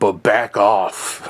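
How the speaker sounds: low, dropped-down voice. Quoting a talk-show host turning on a mayor: imitating Whoopi Goldberg, lower pitch. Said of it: "drops it down a pitch".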